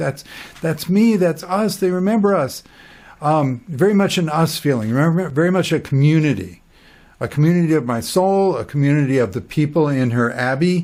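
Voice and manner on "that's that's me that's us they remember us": mock high, ringing exclamation, like an inner shout. Retelling the brain shouting after reading the article: retelling an inner shout. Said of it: "my own brain is just shouting like".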